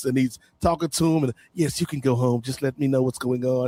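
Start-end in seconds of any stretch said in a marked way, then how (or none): 1.5-3.7 put-on smooth suave voice, lower. Retelling a TV scene, voicing the fixer: imitating a smooth, suave fixer. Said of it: "the smooth, suave, like, Fixer".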